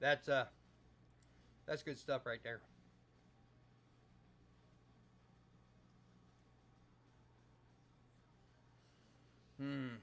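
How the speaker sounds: talking with mouth full. After thanking Greg, the speaker talks while still chewing: talking with mouth full. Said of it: "I'm still chewing".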